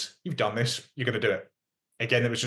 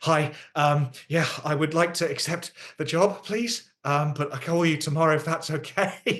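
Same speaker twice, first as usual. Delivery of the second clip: mock panting while talking, higher pitch; 6 semitones higher than usual. Speaker retelling accepting a job by phone on the way to hospital, imitating panting. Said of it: "on my way to hospital and panting".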